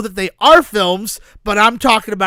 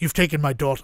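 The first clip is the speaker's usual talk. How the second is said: put-on Irish accent, lower in pitch and quieter; 5 semitones lower, 7 dB quieter than usual. Acting out the movie Taken set at a basketball game: Liam Neeson voice. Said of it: "Your Irish accent is astounding".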